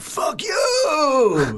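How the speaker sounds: high, swooping scream with drawn-out "you". Retelling how a performer ran back on stage after his set, imitating someone screaming out. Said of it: "just screamed out".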